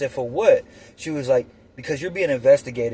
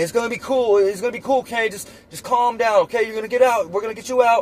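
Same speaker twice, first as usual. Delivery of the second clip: put-on yell, raised and pitched up; 9 semitones higher than usual. Retelling the dad's reaction during an arrest: imitating dad yelling. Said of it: "My dad's yelling".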